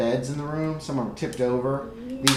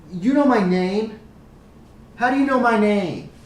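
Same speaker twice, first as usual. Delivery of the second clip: put-on higher, louder little girl voice. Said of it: "She goes".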